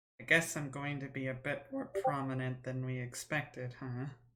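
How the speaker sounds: soft, hushed half-whisper under the breath. Player speaking as Althea to another character, half-whispering. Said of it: "Althea kind of whispers to Arabella".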